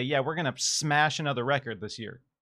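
ordinary delivery

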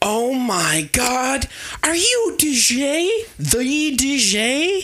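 starstruck gush, very high, very slow, swooping. Voicing an excited tiefling running up to a hero: gushing fan. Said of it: "just gushing over, um, D J, and is such a big fan".

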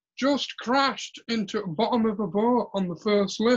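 mock high, drawn-out shout as across a gap. Retelling someone shouting over from near the ride exit: imitating someone shouting over. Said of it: "shouts over and going".

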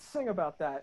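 normal talking voice

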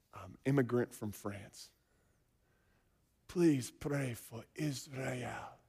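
gentle, hushed, very soft-spoken voice. Retelling a prayer request from future mother-in-law in church: imitating Helen's soft-spoken voice. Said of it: "Soft-spoken voice".

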